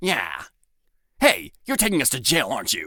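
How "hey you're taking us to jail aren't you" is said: swooping, animated bandit character voice. Showing the new voice of the main bandit: new bandit voice. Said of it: "he sounds like this now".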